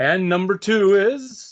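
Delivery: radio announcer delivery. Announcing the result of a die roll for a giveaway, in a radio announcer voice. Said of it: "I'm still in my radio voice".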